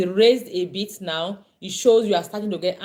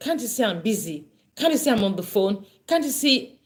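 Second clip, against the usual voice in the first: growing annoyance, on the edge, building anger. Speaker demonstrating how a parent answers an interrupting child, beginning to get angry. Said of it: "You're beginning to get angry".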